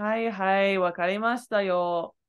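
slow, sardonic, dismissive sarcastic brush-off. Showing how the doubled reply sounds: sarcastic. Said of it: "So it feels very".

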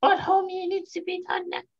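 put-on raspy cartoon mom voice. Trying a voice after the other speaker's turn: Marge Simpson voice. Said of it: "a pretty sturdy Marge Simpson".

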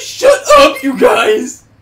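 shrill, very loud cartoon shout with pitch swinging. Trying a cartoon voice after someone else says they can't: Muscle Man voice. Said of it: "I can try to do Muscle Man".

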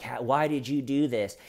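ordinary talk

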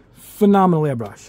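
stress on PHENOMENAL.

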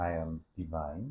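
hushed, very quiet, very low deep bass voice. Introducing yourself on a YouTube channel video: bass voice. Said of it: "I should not use my, my bass voice".

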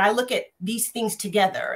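normal talking voice

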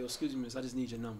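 calm, soft, relaxed, straightforward. Acting out a guy walking up at a club: imitating a calm guy asking.

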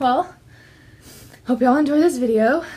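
very loud, out-of-breath, winded words. Ending a video for viewers after stacking books, out of breath. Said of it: "I'm out of breath".

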